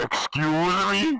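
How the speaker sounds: shouting. Reacting to someone shrugging off getting expelled, the character is yelling. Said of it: "Sorry for yelling".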